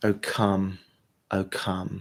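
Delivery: quiet whispering. Leading a breath prayer, breathing out the words: whispering. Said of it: "just whispering".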